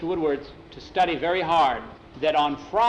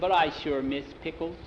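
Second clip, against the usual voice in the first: plain reading voice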